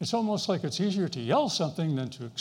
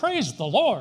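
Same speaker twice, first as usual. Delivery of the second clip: raised, loud, carrying exclamation; 6 dB louder than usual. Recounting a golf partner's habit after a good shot: retelling a loud exclamation. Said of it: "in a loud voice".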